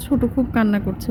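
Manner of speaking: usual speaking voice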